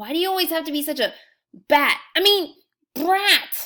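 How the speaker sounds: speaking through gritted teeth. Narrator reading the line the narrator says to Olive, through clenched teeth. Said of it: "I said through clenched teeth".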